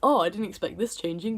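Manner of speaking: normal talking voice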